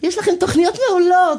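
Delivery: very high-pitched woman's voice. Retelling knocking on a listener's door, voicing the woman who answered, imitating a woman's voice. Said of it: "עשיתי כאילו אישה ענתה על הדלת".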